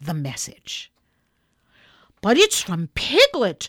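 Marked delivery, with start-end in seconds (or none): 2.2-3.7 crying out, loud and exclaiming. Someone who has just read a message handed to him, crying out. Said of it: "cried Christopher Robin".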